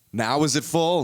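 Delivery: put-on pushy, aggressive voice. Retelling a man quizzing students about a jar of rocks, mock-aggressive quote of him. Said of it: "I don't know why I'm making him aggressive".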